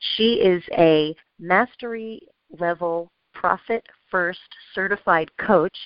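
very slow, deliberate delivery with each word weighed. Host introducing her guest on the radio network, said really slowly. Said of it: "I said that really slowly".

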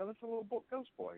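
put-on very high, soft, offhand matter-of-fact tone. Imitating a grandmother who calmly announces a ghost boy: imitating a matter-of-fact tone. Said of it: "It says it so matter of fact".

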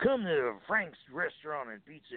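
cowboy-style announcer read. Retelling a commercial recording for a Maryland restaurant, doing a cowboy voice. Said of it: "a cowboy kind of voice".

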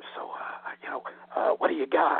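acted-out whispering. Retelling leaning over a shop counter to the girl behind it: retold whisper. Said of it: "I whisper to the girl behind the counter".

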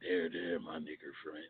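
very low-pitched voice, very quiet, barely audible. Repeating a line to the other speaker: Paul Mooney voice. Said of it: "That's a Paul Mooney voice".

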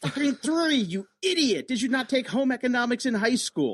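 very high, furious, acted-out screaming rant. Recounting the speaker's answer to the wife's teaspoon question: retelling a scream. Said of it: "I'm screaming at 3".

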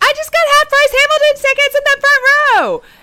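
shrill, high, booming, loud outburst. Imagining yourself in Times Square with new tickets, retelling an exclamation. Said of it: "start exclaiming".

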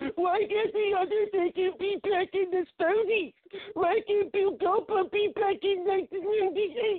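mock blubbering, whiny crying voice. Mocking complaining fans who want old wrestlers back: imitating a whining crying fan. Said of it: "that's what you sound like".

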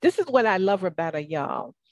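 natural Southern accent with sing-song swooping pitch. Praising a guest to the audience: southern accent slipping out. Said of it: "that's my Southern accent coming out".

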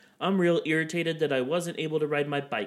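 plain

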